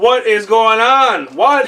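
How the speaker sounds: very high, very loud, shrill drill-sergeant screaming. Narrating a roll result, voicing the player's instructor as a screaming drill instructor. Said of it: "Your instructor is just screaming at you".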